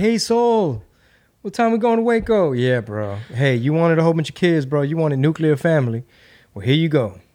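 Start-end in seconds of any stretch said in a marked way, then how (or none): 0.0-2.5 very high, raised shout. Retelling yelling across a loud room full of kids; retelling a yell. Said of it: "I'm like yelling".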